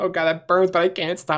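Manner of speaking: high, helpless words squeezed out mid-laughing fit. Retelling coughing up stomach acid mid-fit: imitating own helpless laughing. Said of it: "I was so laughing so hard".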